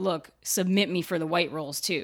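normal talking voice

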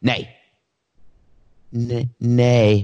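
fearful, hurried, scared-sounding. Explaining old-time voting, the speaker demonstrates opposing votes, scared nay vote. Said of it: "So the nays would be like this".

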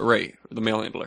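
ordinary talk

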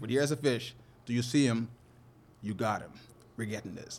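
put-on earnest serious voice. Recounting spotting a fish with a companion, the speaker is retelling a serious tone. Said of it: "you could hear with my voice the seriousness in it".

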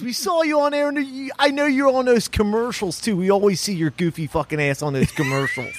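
imitated Philadelphia accent. Retelling what someone said to him: imitating a Philly guy. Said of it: "You sound like a Philly guy".

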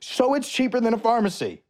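high-pitched, hyped-up shouted yelling. Reading out a special deal for the listeners of the show, yelling like Gary Vee. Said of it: "I don't know why I'm yelling at you like I'm Gary Vee".

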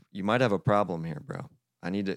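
plain

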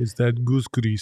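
clumsy, bad put-on Russian accent. Joking about a basketball player whose hair never moves, asking in a bad russian accent. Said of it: "Did you like my Russian accent?".

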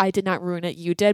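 ordinary talk, nothing marked

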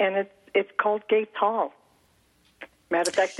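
choking up, tearful, breaking voice, close to tears. Speaker tells of a veterans hall honoring their aunt, tearful. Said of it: "it makes me cry just talking about it".

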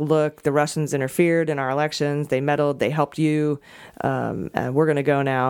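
ordinary talk

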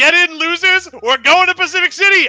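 yelled in a character voice. Voicing Zach calling from the RV driver's seat to the group, Zach yelling. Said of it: "he yells".

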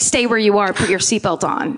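put-on rude, bossy voice. Recounting a man who suddenly turns rude, retelling a rude order. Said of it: "Bill suddenly gets real rude and is like".

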